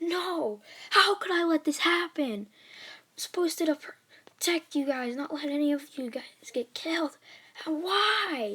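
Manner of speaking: mock furious anguished cry. Retelling a hero's reaction on learning his friend was killed, retelling a furious outburst. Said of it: "he's just like super pissed, super mad".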